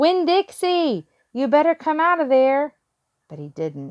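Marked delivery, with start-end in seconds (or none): 0.0-2.7 play-acted shrill, high, raised, carrying holler. Narrator reads a character hollering at a gate for the dog, hollering. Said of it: "went up to the gate and hollered".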